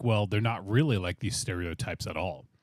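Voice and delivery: ordinary talk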